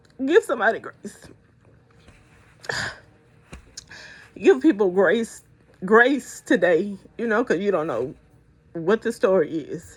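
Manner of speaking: crying while talking. Urging listeners to give people grace, crying while talking. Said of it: "because I am crying".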